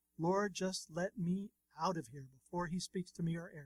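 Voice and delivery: ordinary talk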